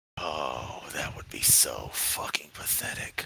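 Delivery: low, soft, disgusted whisper.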